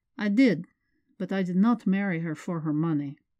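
ordinary delivery

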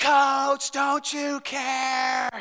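play-acted loud, high, boisterous pleading yell, care stretched. Retelling a mother yelling at the coach from the stands, imitating her yelling. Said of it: "She is yelling".

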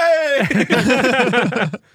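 high, loud, cheery shout of hey.

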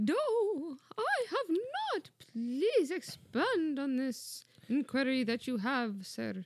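put-on, high, swooping British woman's accent. In a two-voice bit, answering the man who calls her darling, British lady accent. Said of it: "I can definitely do the British lady".

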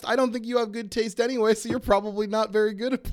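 fast, high, mock-taunting jab rattled off.

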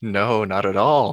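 sarcastic tone. Denying being sarcastic when asked: sarcastic tone. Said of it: "That also sounds like sarcasm".

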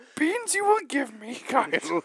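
loud reversed speech, high pitched. While others talk of being carried up a mountain, one speaker answers another in Yoda voice. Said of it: "Stop talking like that".

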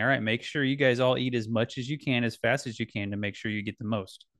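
ordinary talk

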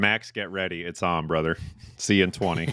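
ordinary talk

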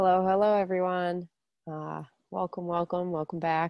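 stuffy, congested voice, as with a head cold. Welcoming listeners back while getting over a head cold: congested voice from head cold. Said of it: "Sorry if I sound a little funny".

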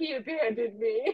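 ordinary delivery

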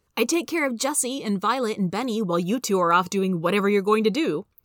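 plain reading voice

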